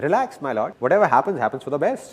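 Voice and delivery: ordinary talk, nothing marked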